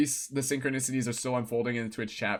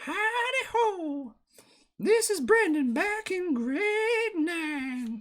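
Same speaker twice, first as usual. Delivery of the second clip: put-on very high, slow, drawn-out cartoon child voice. Recalling how he sounded in grade nine before his voice dropped, Cartman-like teen voice. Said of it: "Sounded like Cartman almost".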